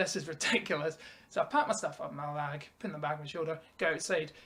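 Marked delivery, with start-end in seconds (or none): 0.0-1.0 put-on laughing while talking. Recounting being told to get out by a woman, retelling laughing while talking. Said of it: "I'm laughing away going".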